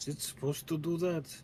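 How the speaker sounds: hushed half-whispered voice. Playing a character who turns to a companion: half-whispering in character. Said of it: "kinda whispers".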